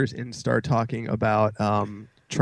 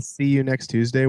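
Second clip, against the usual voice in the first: ordinary talk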